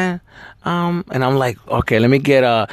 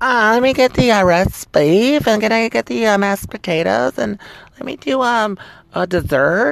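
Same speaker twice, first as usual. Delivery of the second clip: put-on higher-pitched, casual girl's voice; 6 semitones higher than usual. Retelling how women order on a date: imitating a woman ordering food. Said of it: "The girl".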